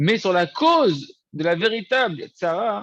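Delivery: véritable tsara stressed hard, slow and loud.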